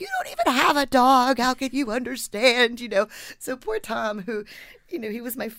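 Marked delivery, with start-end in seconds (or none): 0.0-2.8 very loud, high-pitched, swooping shout. Recalling an argument with an editor, reenacting own words: retelling a yell. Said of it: "I remember yelling at him like".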